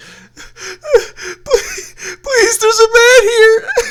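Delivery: absolutely sobbing, high, loud, pleading.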